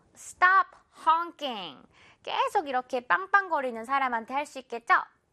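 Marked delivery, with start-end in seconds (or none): 0.2-1.8 very slow, careful, drawn-out delivery. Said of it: "이렇게 한번 말해볼까요?".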